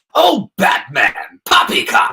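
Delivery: animated, clownish cartoon supervillain voice. A voiceover actor shows the impression they love doing, addressing Batman in a Mark Hamill Joker voice. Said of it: "I love doing the Mark Hamill Joker".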